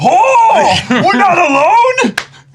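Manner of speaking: big booming voice, very loud and high. Speaker imagining how Taiju reacts, in Taiju's loud booming voice. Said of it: "with his loud, booming voice, will be like".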